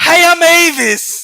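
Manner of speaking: very high, loud, put-on voice. Describing how a man sounds, then doing his put-on high-pitched voice. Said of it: "I think he got a real high pitched voice".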